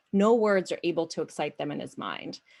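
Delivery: ordinary delivery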